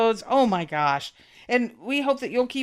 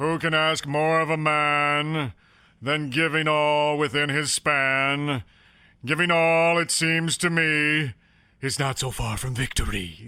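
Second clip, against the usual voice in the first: put-on pompous movie actor voice, lower; 8 semitones lower than usual. Reading a baseball player's quote aloud: Ted Knight voice. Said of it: "in the voice of Ted Knight from the movie Caddyshack".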